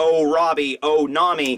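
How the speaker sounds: usual speaking voice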